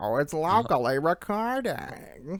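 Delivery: put-on elderly woman character voice. Commenting that the recording is running locally, in an old lady voice. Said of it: "Why did you use that voice?".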